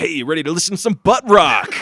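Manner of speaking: belted out loudly like a cartoon hero. Doing a fan-dub style bit with another speaker, Sonic voice. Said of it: "That's my Sonic voice".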